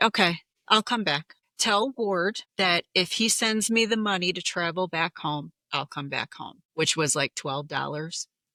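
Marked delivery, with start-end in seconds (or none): none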